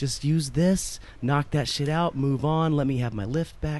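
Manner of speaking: usual speaking voice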